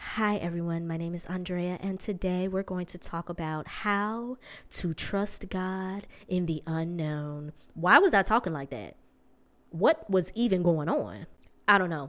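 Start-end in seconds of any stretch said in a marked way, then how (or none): 0.0-7.5 calm, collected, soft little radio-host voice. Podcaster recalling how she opened her first season, in her old little radio voice. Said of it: "I had my little radio voice".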